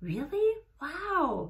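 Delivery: completely stunned. Responding to a friend's surprising news, totally shocked. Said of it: "totally shocked".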